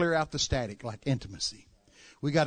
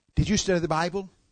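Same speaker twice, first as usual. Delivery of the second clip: usual speaking voice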